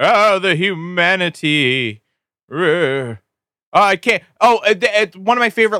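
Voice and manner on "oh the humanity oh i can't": mock old radio announcer voice, very slow. Mocking a 1930s radio broadcast as bad acting: mock old radio announcer. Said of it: "pretending to do a boring radio show".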